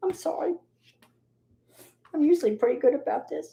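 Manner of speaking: voice overcome with emotion. Asking for a moment of silent prayer for a woman and her family, getting emotional. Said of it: "I'm sorry I got all emotional".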